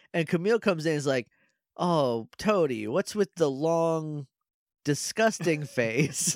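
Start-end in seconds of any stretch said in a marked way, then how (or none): none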